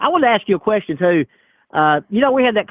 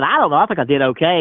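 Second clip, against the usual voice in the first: plain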